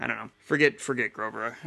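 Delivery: ordinary talk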